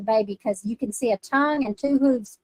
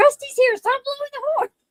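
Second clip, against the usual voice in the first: imitated scream, higher and louder; 4 dB louder than usual. Retelling a friend screaming at her after the panic button: imitating someone screaming. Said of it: "he's screaming at me".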